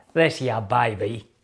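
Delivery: totally fake, put-on Texas drawl. Introducing a cowboy boot to viewers, in a totally fake texas drawl. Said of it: "he says in his totally fake Texas drawl".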